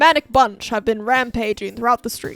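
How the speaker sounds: put-on loud, old-time vintage radio announcer delivery. Pretending to read a radio bulletin: old radio announcer voice. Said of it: "I'm on the radio".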